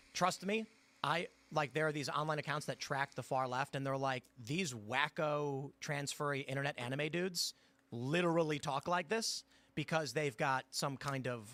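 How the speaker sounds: plain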